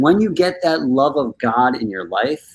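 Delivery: ordinary delivery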